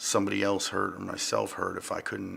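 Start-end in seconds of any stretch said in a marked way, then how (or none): none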